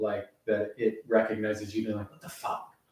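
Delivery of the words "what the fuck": frustrated, whispered voice. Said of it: "your frustrated voice when those don't work".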